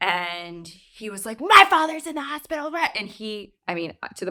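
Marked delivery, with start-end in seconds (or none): 1.4-2.7 mock male screaming, much higher, louder, faster. Retelling a fellow passenger's outburst at a flight attendant, imitating him screaming. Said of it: "He's screaming".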